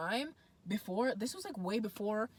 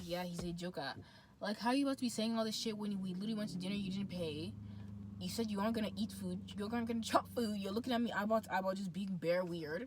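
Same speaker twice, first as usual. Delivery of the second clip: ordinary talk, nothing marked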